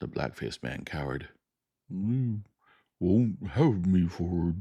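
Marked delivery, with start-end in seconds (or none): 1.9-4.6 slow, hoarse, dragging, cowering voice. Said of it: "He spoke slowly, with a hoarse quality in his voice".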